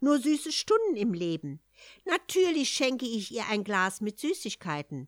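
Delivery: ordinary delivery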